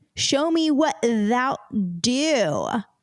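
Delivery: very slow American Southern drawl. Trying out Elizabethan English lines in a Southern American accent. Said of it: "now I'm doing an accent".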